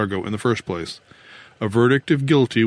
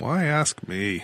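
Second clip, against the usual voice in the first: tired, worn-out, weary, soft voice; 4 semitones higher, 5 dB quieter than usual. Jackson answers the narrator's question about Ashcroft: weary. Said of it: "Said Jackson wearily".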